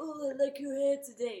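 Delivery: approving creative stylist voice. Retelling a compliment from the salon's creative director: imitating the salon creative director. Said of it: "that was a really good impression".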